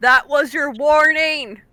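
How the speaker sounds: slow loud yelling. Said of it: "Rogue is yelling at the back".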